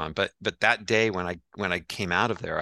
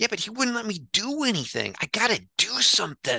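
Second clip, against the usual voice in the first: put-on voice pitched very high and swooping. Retelling what Adam said about wanting to do something: Adam Sandler impression. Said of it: "Who knew you had such a Sandler impression in you?".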